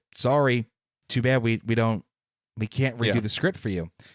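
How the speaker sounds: ordinary talk, nothing marked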